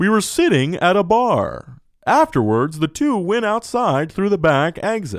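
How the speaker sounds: newscaster-style news reporter voice. Retelling a first date, redoing the story in a news reporter voice. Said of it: "like a fucking news reporter".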